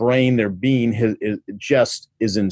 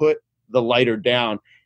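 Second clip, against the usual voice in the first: ordinary delivery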